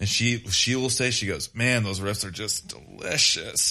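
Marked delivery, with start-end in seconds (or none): 1.5-3.7 mock-sultry, put-on seductive, sexual-sounding voice. Quoting a woman who comes to see the band, imitating her sexual-sounding voice. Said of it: "she says it like in a really sexual kind of sounding way".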